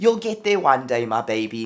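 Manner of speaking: put-on motherly, encouraging South African accent. Retelling what she said to encourage them, South African accent. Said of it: "She has a South African accent".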